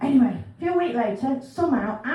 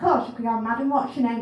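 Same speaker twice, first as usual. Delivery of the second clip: normal talking voice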